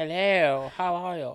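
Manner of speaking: posh, plummy voice, as if with plums in mouth. Husband greeting listeners at the start of a recording, talking like plums in his mouth. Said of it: "talk like he's got plums in his mouth".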